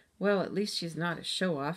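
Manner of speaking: ordinary delivery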